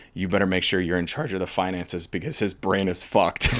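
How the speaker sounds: usual speaking voice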